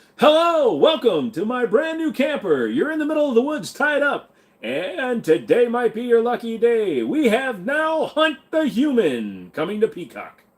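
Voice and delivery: shrill, swooping, high, loud game show announcer voice. Greeting someone tied up in the woods, in a game show host voice. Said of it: "Sounds like you're starting a game show".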